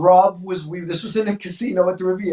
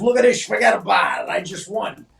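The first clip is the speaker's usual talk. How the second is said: imitated Italian-American voice. Retelling how a friend showed off his winnings: imitating a friend's Guido voice. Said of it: "Rob does his Guido voice".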